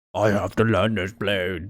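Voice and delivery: low, slow, deep man voice. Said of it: "deep man voice".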